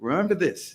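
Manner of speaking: put-on French immigrant accent. Retelling a father's question after graduation: imitating father's french accent. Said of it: "I talk in his accent".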